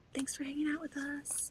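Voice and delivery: soft hushed whisper, slightly high. Saying good night to Tracy over the monitor, whispering. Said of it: "I'm whispering too".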